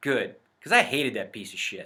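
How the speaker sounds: bone-dry, completely serious deadpan delivery. Telling a story, acting out another man's reply, retelling a deadpan line.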